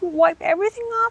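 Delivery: acted, very high, stunned and shocked disbelief. Retelling a contestant's question about removing makeup: imitating someone shocked. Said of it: "in a way where she was so shocked".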